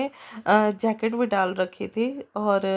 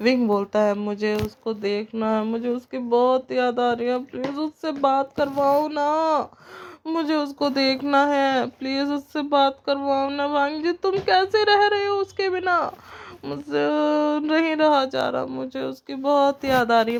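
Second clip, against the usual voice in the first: put-on drunk voice, much higher; 5 semitones higher than usual. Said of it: "ऐसे करके ना वो नशे में बोल रहा होता है".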